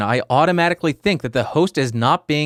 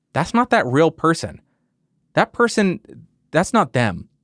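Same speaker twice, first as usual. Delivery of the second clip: ordinary talk, nothing marked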